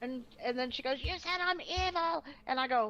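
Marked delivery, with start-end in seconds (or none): 1.0-2.2 high, drawn-out, accusing scream. Retelling how she started screaming in an argument: imitating someone screaming. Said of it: "She started screaming".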